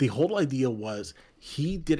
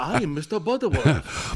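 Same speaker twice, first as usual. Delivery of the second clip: put-on Korean accent; 4 semitones higher than usual. Joking about someone copying characters, saying a line in a put-on korean accent. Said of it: "but in a Korean accent".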